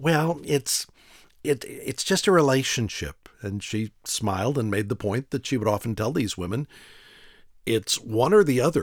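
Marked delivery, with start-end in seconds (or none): 0.0-3.3 put-on high, slow, drawn-out teenage girl voice. Retelling a woman switching between her own voice and a teenage girl's; teenage girl voice. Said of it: "she'd go back to sounding like the teenage girl".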